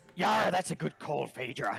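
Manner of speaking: shouting upward. Voicing the captain answering a player from below: captain yelling up. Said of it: "he yells up to you".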